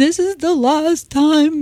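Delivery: high, slow, tearful, wistful sigh.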